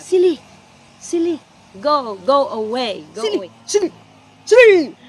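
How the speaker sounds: very loud, high dog-calling voice. Showing how a dog is warded off, in dog accent. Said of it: "silly in dog accent".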